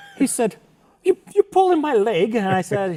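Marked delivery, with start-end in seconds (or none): 1.0-2.4 bad put-on British accent, very high pitched. Retelling what a surprised British man said: horrible British accent. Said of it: "horrible British accent".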